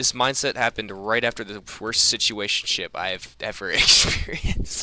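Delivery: talking straight through laughter. Speaking to camera for a video, laughing while talking. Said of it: "I'm laughing because it's kind of hilarious".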